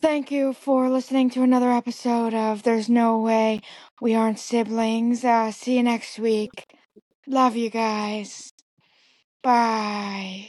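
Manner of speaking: weary, tired, drawly, "bye" stretched out. Closing the episode on request, doing a Jennifer Coolidge voice. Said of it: "for my Jennifer Coolidge".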